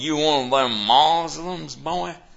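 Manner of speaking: put-on Texas accent, very high, shrill, very loud. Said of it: "I'm from Texas, I can't help it".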